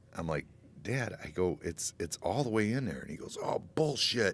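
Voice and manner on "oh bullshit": high, fed-up, angry yell. Retelling an argument with his dad over the truck: imitating dad yelling. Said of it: "and he's yelling at me".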